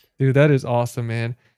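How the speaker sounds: normal talking voice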